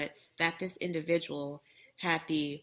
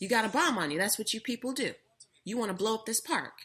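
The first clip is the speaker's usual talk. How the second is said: angry, accusing, pitched-up yelling rant; 6 semitones higher than usual. Recounting a man in a park accusing the speaker: retelling a man's yelling. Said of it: "he's yelling the whole time".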